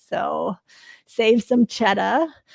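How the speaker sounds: slow, drawn-out put-on New England accent. Plugging a ticket discount for an event in New Hampshire, New England accent. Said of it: "I say that in a New England accent".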